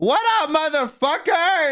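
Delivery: put-on hyper, very energetic voice. Retelling a girl's greeting at the booth: imitating someone full of energy. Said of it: "going crazy immediately, super full of energy".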